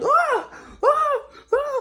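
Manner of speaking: put-on short, very high girlish screams. Retelling a film scene, imitating a character's scream: imitating a high scream. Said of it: "starting to scream like a, like a girl".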